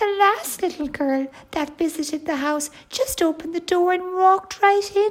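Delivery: small, squeaky, high-pitched little voice. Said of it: "said a squeaky voice".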